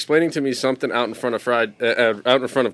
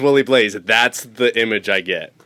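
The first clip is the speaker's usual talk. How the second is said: ordinary talk, nothing marked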